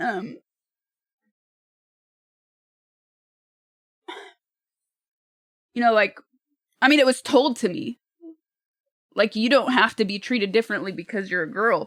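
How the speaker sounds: tearful, crying while speaking. Speaker recalls what she was told while thinking of her late dad, crying. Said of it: "I'm crying because I'm thinking about my dad".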